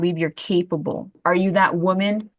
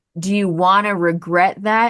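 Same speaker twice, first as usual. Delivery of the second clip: ordinary talk, nothing marked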